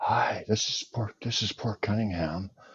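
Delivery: soft-spoken delivery. Told to just try talking soft, the speaker introduces himself: talking soft. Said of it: "Why don't you just try talking soft?".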